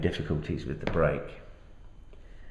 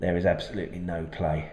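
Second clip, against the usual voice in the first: normal talking voice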